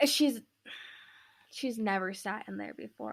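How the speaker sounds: soft, choked-up, teary, on the edge of crying. Speaker talking about their cat on a tear-filled episode, choked up, near tears. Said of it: "I'm gonna cry".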